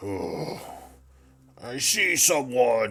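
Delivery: growled delivery. Storyteller voices a figure who hears a noise and looks over; growling. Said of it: "he growls and says".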